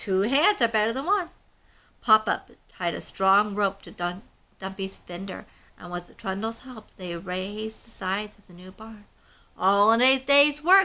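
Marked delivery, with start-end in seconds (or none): 9.6-10.8 pleased, proud, boastful delivery. Narrator reads a character's line once the barn walls are raised, proud. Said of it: "Trundle said proudly".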